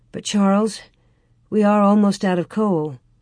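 ordinary talk

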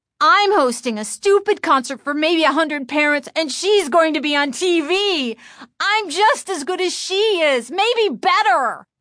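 furious, raging, very high-pitched scream. Chris speaks aloud to herself about Lindy being on TV, in a rage. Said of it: "In a rage".

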